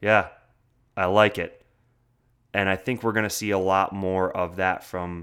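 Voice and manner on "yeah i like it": mock-curt, short, louder reply. Quoting a player's answer to one of the guys, retelling a curt reply. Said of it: "very curtly says".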